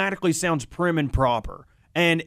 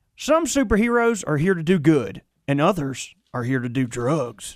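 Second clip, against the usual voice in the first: very heavy, thickest possible put-on Southern accent; 2 semitones lower than usual. Asked for the thickest Southern accent possible, reading the show tease in it. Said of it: "give me your thickest Southern accent you can give me".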